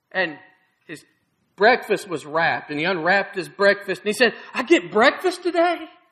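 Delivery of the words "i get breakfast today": acted-out delighted, amazed voice, high and excited. Telling a story about a man unwrapping his breakfast, acting out excited amazement. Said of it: "And he's all excited".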